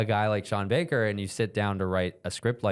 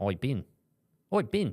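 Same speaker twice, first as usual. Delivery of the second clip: put-on Australian accent; 4 semitones higher than usual. Speaker imitates how people in australia say the other speaker's name, in a put-on australian accent. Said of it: "and Australia".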